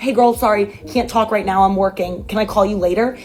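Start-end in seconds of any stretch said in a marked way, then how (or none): none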